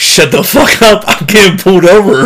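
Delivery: put-on high-pitched yell, shouted from a distance. Retelling a traffic stop, acting out the driver yelling back at a passenger: retelling a yell. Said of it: "And Greg just yells back".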